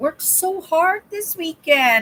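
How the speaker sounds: high, whining, complaining tone. Telling viewers about working hard all weekend: whiny voice. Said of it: "you hear the whine in my voice?".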